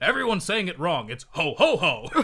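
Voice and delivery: booming, high, belted-out voice with big swoops. Retelling a cartoon scene, voicing Santa Claus from Family Guy. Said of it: "they have Santa Claus, and he says".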